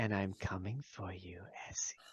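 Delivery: very quiet, hushed, whispering woman's voice. Voicing a mysterious whispering lady heard from a mushroom: whispering lady's voice. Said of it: "Whispers like a lady who".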